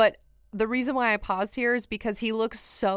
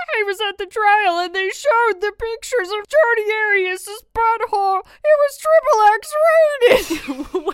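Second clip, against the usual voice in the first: high, loud woman's voice; 11 semitones higher, 9 dB louder than usual. Quoting a woman interviewed in a documentary: imitating the interviewee's voice. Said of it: "her voice literally sounded like that".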